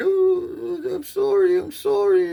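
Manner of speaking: put-on crying, very high-pitched and drawn out. Retelling a scared boy's words as he was caught: imitating a boy crying. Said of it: "And he's crying".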